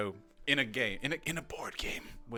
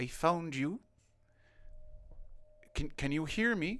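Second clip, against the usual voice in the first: echoing, resonant, reverberating voice, pitched up; 7 semitones higher than usual. Narrating to listeners a voice heard in their minds, soft-spoken reverberating voice. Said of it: "a soft spoken, um, reverberating voice".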